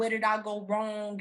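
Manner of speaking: plain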